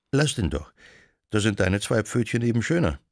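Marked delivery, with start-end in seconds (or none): none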